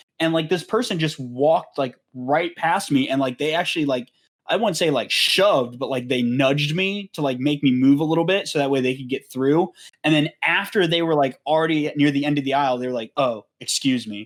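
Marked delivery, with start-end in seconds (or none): 13.2-14.3 play-acted patronising, condescending, talking-down politeness. Retelling how a stranger excused themselves after nudging past: imitating a condescending tone. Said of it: "so fucking condescending when you say it like that".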